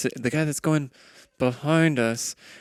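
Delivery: hushed whisper. In character, answering a companion's question about their chances, whispering. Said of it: "She's like kind of whispering this".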